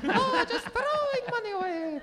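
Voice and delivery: very high, put-on leprechaun voice. While the group talks about doing taxes, the speaker does a leprechaun accent. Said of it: "leprechaun accents now".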